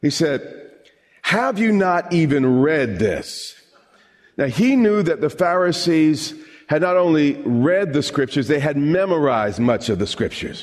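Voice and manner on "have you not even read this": put-on, palpably sarcastic, slow delivery. Quoting Jesus answering the Pharisees: retelling a sarcastic retort. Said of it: "the sarcasm in his response is, is, is almost palpable".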